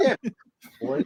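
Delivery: very high, goofy cartoon-style voice. Performing a voice for a group: Bullwinkle voice. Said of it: "You sound like Bullwinkle".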